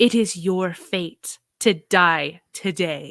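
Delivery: voice deepened into a deep intone. Player voicing their character invoking a creature's destiny, deep, intoning voice. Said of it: "their voice deepens and grows intoned".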